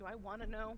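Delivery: soft, hushed half-whisper under the breath. Voicing a character who asks another character something while walking: half-whispering in character. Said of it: "Sapphire will kinda whisper to Zarfeaz".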